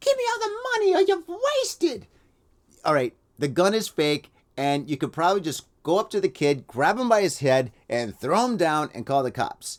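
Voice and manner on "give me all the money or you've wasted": put-on squeaky, very high-pitched cartoon mouse child voice. Acting out a sixteen-year-old robber with a fake gun, in a high kid voice. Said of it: "They sound like Mickey Mouse".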